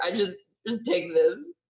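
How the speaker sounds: speaking while crying, words pushed through tears. A player's character walks back into the store still crying: crying while talking. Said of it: "still crying and just be like".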